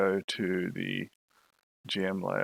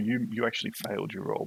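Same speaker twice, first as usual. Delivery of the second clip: ordinary talk, nothing marked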